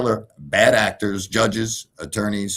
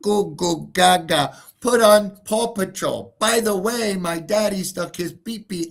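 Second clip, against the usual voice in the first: mocking, very high, squeaky, babbling baby talk; 11 semitones higher than usual. Mocking a claim that a baby spoke: mocking baby talk. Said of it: "the baby told them in baby talk".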